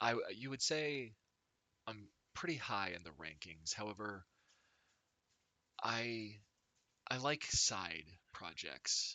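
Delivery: smug, smirking woman's voice. Voicing a woman on a throne of crates addressing a player: smirking woman's voice. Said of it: "She says".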